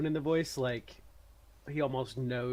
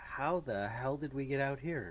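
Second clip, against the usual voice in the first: ordinary talk, nothing marked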